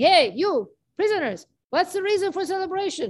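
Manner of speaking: mock guard voice, high, calling out. Telling a story, the prison guard at the door: guard yelling at prisoners. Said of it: "starts yelling".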